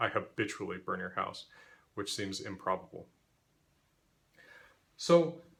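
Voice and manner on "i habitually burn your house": normal talking voice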